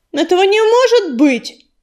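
high outburst, cried out aloud. A cat told he is the prophesied silver cat protests, exclaiming. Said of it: "воскликнул ураган".

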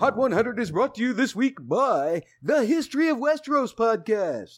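exaggerated radio announcer voice, high and swooping. Reading a sponsor spot on a mock radio show, over-the-top radio announcer voice. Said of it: "as an over-the-top radio announcer".

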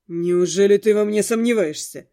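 condescending, mocking scoff, full of superiority. A man answers a woman's challenge, mocking and superior. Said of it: "Насмешливо и с нотками собственного превосходства фыркнул Дорс".

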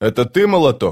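plain

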